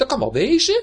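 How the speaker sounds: very high, loud, sudden outburst. A narrator reads the left shoe arguing back at the right shoe, bursting out. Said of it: "barstte de linkerschoen weer los".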